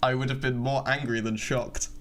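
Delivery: ordinary delivery, nothing marked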